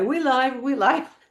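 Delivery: streamer-style announcer voice. Teasing the channel host by imitating how he starts streams: imitating Rob. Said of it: "you're like".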